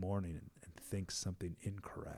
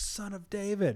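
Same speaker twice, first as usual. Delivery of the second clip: mock very high, loud shouting cry; 12 semitones higher than usual. Retelling a man calling out to Jesus while the crowd hushes him, retelling a louder shout. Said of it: "he's just like all the louder".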